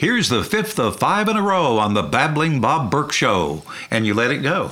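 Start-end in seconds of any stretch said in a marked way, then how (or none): 0.0-3.6 on-air radio announcer delivery. Recalling cueing up records as a radio host, introducing a track in broadcast voice. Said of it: "That's my broadcast voice".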